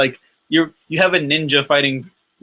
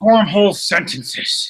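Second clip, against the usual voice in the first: halting, struggling villain voice, higher; 5 semitones higher than usual. Describing an actor's odd character choices: Kingpin impression, halting speech. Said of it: "I struggled, like he did, to form a sentence right there as him".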